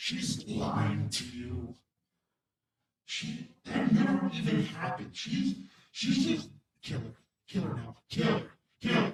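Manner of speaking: inner character voice. Game master voicing a voice in the player's head, voice in the back of your head. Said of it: "You hear a voice in the back of your head saying".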